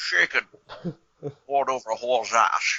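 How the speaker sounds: put-on Scottish-accented spy voice. Joking about a milkshake order: Sean Connery James Bond voice. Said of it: "so the Sean Connery James Bond".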